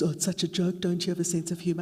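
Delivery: put-on male voice. Quoting the sexist jokes women hear at work: imitating a sexist man's voice. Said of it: "I'm sorry to put on that voice, but it's my sexist male voice".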